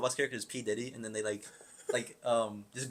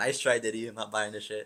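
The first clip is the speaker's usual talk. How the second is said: usual speaking voice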